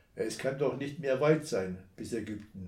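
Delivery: plain reading voice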